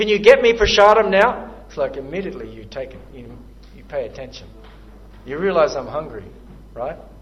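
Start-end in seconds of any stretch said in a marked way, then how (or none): 0.0-1.5 forceful, intense, vigorous, very loud delivery. Showing how a request sounds when said as an urgent command: vigorous, intense tone. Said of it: "But if I say it in a vigorous tone".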